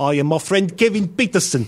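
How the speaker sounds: mock South African accent.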